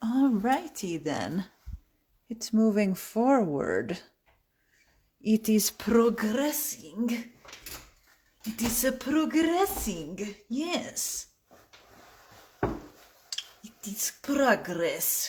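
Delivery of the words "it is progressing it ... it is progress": slow, terrible wannabe Russian accent. Joking that things are progressing, in a bad russian accent. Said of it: "My shitty wannabe uh, Russian accent is terrible".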